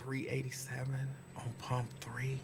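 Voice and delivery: mock whispering. Retelling what the speaker whispered to a man, retelling a whisper. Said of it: "You hear me whispering".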